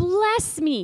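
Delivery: imitated shout. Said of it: "he actually shouted this out".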